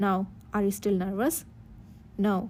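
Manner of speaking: plain reading voice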